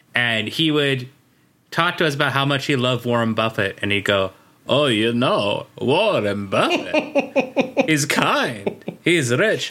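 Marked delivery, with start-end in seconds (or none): 4.6-9.7 put-on slow, drawling Italian accent. Quoting an Italian man who talked to us, [name]'s Italian accent. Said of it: "This is exactly his accent".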